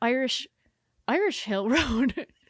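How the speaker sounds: put-on confused Irish woman's voice. Retelling the phone's navigation voice getting confused: imitating confused Irish Siri voice. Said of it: "an Irish woman's voice".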